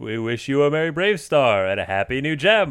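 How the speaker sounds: big cartoon bear character voice. Asked to say a mashed-up holiday greeting like a cartoon bear, do a Yogi Bear voice. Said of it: "Can you say it like Yogi Bear?".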